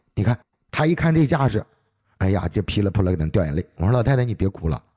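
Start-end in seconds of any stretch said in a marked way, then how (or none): none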